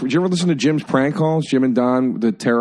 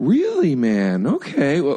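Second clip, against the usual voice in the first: put-on sincere voice. Imitating how Joe Rogan would react to a prank: sincere. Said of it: "I think he'd be real sincere".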